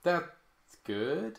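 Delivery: ironic, insincere delivery. Showing how they reacted when the movie ended, with a mock-sarcastic 'that's good'. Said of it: "it was more of a sarcastic".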